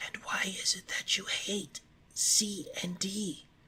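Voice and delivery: soft, hushed, half-afraid whisper. Alice asks the mouse a further question, half afraid of offending it, in a whisper. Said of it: "she added in a whisper".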